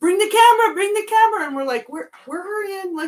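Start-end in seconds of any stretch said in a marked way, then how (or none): 0.0-1.5 high-pitched, loud yelling. Retelling how mom yelled at the kids to bring the camera, imitating mom yelling. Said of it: "my mom's just like yelling at us".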